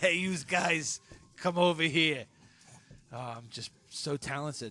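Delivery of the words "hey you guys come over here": put-on New Jersey accent. Showing off voice acting skills when asked, jersey accent. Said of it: "Say hello to Spoons, Jersey".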